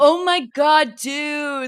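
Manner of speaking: very slow, loud, high American bro accent, dude stretched. Showing what a typical American accent sounds like: typical American bro accent. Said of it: "what you would describe as a typical American accent".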